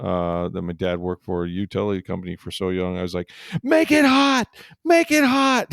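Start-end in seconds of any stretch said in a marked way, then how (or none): 3.6-5.7 shrill, very high, drawn-out scream. Retelling screaming at workers to restore the power: imitating screaming. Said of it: "So I'm screaming".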